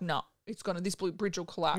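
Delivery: normal talking voice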